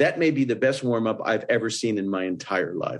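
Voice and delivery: normal talking voice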